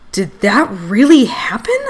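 with a gasp. The narrator watches garbage magically turn into a throne and gasps. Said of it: "I gasped".

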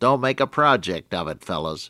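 put-on voice, somewhat nasal. Quoting Percy Crawford's advice to the fellows traveling with him, in his somewhat nasal tone. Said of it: "in his somewhat nasal tone".

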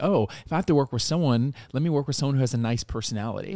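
ordinary talk

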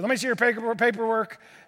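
put-on gruff, curt woman's voice. Retelling what the clerk at the table said: imitating a gruff clerk. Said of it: "this lady is just very gruff with me".

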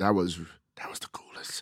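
whispered aside. A guest recalls getting stationed abroad in Germany, whispering. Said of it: "And I'm whispering that".

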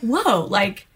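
ordinary delivery

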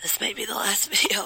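hoarse, weak sick voice. Filming a birthday video for a sister while sick with flu: scary-sounding voice lost to flu. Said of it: "you sound scary".

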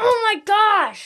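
acted, high, exasperated, frustrated yell. Asked what they yell when mad at a video game, the speaker acts it out, retelling a yell. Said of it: "what's the number one phrase you like to yell".

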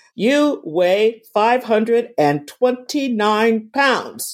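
robotic, automated machine announcement voice. Describing a scale that reads your weight aloud, imitating it in a computer voice. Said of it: "in this computer voice".

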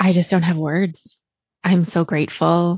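tearful, choked up, close to crying. Thanking the podcast listeners for shaping who you are, tearful, close to crying. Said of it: "I'm gonna try to do this without crying so hard that you can't understand me".

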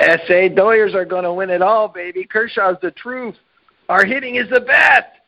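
put-on Los Angeles accent. Doing the first one as instructed, in the accent of a Dodger fan. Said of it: "do it with an accent of a Dodger fan".

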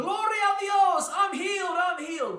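very high-pitched, very loud shouting. Retelling how a healed woman ran through the village streets: imitating someone shouting. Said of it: "shouting out".

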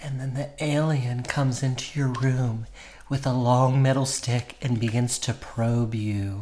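oddly sensual ASMR-style narration. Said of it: "That did sound, like, oddly, like, sensual".

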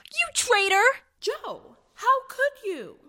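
very high, loud, drawn-out dismayed outcry. Three girls confront Joe after she reveals Laurie in the closet, crying out. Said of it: "cried the three girls".

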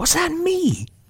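very high, hardly-believing, awed voice. A listener, hardly daring to believe it, asks a question: very awed. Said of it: "in a very awed voice".

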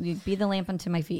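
normal talking voice

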